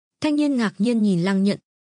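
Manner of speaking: plain reading voice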